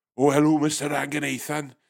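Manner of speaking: put-on Welsh accent. Imitating a call centre worker from wales answering the phone: imitating a welsh accent. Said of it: "You get someone from Wales".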